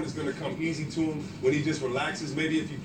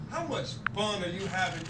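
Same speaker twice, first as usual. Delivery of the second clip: ordinary talk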